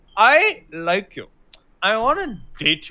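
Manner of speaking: put-on slow, badly acted drunken gushing. Retelling a movie scene where a drunk character opens up: imitating bad drunk acting. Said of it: "she starts opening up in bad drunk acting".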